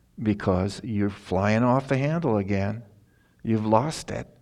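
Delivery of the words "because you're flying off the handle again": normal talking voice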